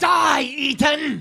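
high, shouting, screeching cry. Game master voicing Moroni as he steps back from a grab, screeching. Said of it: "He screeches at you".

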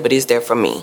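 normal talking voice

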